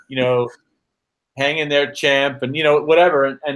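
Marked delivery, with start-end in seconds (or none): none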